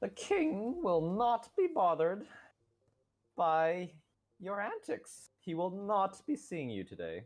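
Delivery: grating, shrill, annoying, very high-pitched voice. Voicing a character who turns you away from the king, shrill annoying voice. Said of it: "in a, a rather shrill voice".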